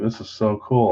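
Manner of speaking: ordinary talk, nothing marked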